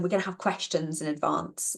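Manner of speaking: ordinary delivery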